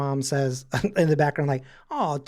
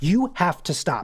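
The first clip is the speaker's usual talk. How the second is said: mock-panicked, acted-out panicky voice. Recounting a girl yelling to her mom, the speaker is retelling a panicked plea. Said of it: "I panicked so hard".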